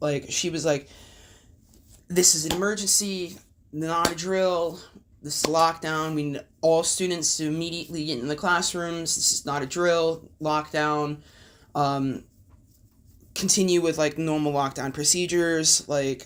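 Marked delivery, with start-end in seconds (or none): none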